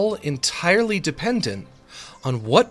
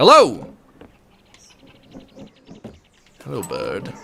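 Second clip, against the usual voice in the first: sing-song barnyard chicken voice, swooping pitch; 4 dB louder than usual. Greeting a bird in the game with a chicken impression. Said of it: "It's my chicken impression".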